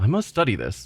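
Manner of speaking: plain reading voice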